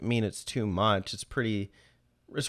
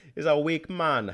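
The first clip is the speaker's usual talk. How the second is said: put-on Caribbean accent, pitched up; 6 semitones higher than usual. Discussing characters' plot lines, the speaker slips into a fake caribbean accent. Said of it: "putting on a fake Caribbean accent".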